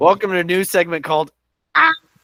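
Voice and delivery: loud shout. Trying the segment intro again after hearing it didn't go through, loud shouted segment intro. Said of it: "How about that one? Did that go through?".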